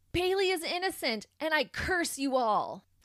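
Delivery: mock boisterous outburst, loud and high, full voice. Speaker recounting a prisoner's outburst in court, retelling a loud boisterous yell. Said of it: "in a loud, boisterous voice, Aubrey yells out".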